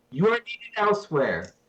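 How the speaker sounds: firm, authoritative, commanding tone. As a soldier character, the speaker addresses three others in a commanding voice. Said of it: "I say in a commanding voice because I'm a soldier".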